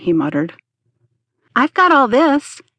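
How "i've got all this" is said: brightly spoken, high, perking right up. Ted speaks up to the others, as if forgetting their trouble, brightly. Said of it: "Ted spoke up brightly".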